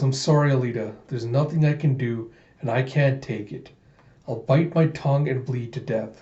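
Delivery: plain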